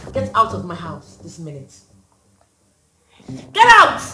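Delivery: upset and agitated. A married woman orders a man confessing his love out of her house; upset. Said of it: "I want you to calm down".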